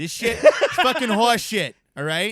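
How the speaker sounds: full-lunged, very loud, high, shrill Boston accent. Showing how cursing sounds more pronounced in a Boston accent. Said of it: "Your whole lungs are in it".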